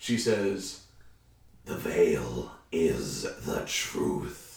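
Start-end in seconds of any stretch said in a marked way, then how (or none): 1.7-4.6 eerie, slow, very drawn-out demonic whisper. Voicing a character's line at a tabletop game, almost demonic voice. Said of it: "in an almost demonic voice".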